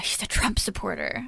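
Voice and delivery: whispered, hushed voice. Describing a rather conservative dad, saying this part in a hushed voice. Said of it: "I say with a hushed voice".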